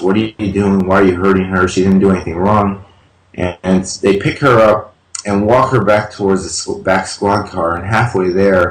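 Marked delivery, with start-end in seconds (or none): none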